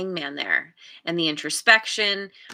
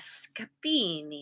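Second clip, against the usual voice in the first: hammy, bad put-on Italian accent; 3 semitones lower, 8 dB quieter than usual. Naming the scapini deck, done in a terrible italian accent on scapini. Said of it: "Always have to say that with my terrible Italian accent".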